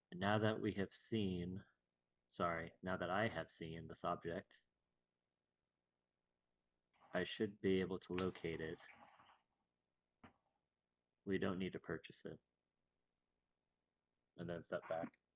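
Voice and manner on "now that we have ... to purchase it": soft, hushed half-whisper, as for one ear. Playing a character leaning in to tell a companion privately: half-whispering in character. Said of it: "kinda whisper".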